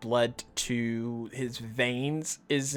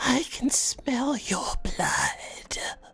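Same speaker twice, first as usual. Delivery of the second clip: hissing, whispered vampire voice; 12 semitones higher than usual. Describing a vampire-like figure as the group stares at him, hissing vampire voice. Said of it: "he hisses and he's like".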